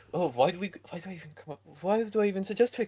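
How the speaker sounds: muttering to oneself. A character turns around as the others walk up, muttering. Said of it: "You probably hear a kill mutter".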